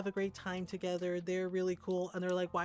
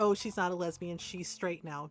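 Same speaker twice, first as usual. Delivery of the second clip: normal talking voice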